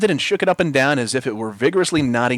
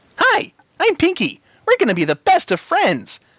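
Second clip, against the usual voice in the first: very high, swooping, sing-song female voice; 3 dB louder than usual. Reading a story, voice Pinky, the creature in a man's beard: Pinky's high-pitched female voice. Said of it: "in a high-pitched female voice".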